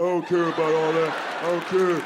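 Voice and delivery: put-on caveman voice. Mocking how women imitate men's voices, caveman voice. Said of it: "It's the same caveman voice".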